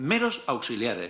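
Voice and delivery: stress on meros, pitch falling at the end.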